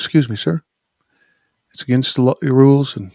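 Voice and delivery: put-on voice of an extremely polite man. Retelling a pit boss asking a man on his phone: imitating an extremely polite man. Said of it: "he was extremely polite".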